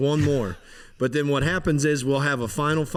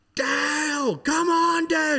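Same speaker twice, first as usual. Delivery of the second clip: very high, slow, drawn-out cheering yell; 13 semitones higher than usual. Retelling how someone shouted from the stands: imitating someone screaming. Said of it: "I can hear Tiff just screaming".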